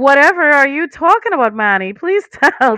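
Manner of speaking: loud, quick, sarcastic feigned innocent astonishment. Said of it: "Sarcasm, sorry".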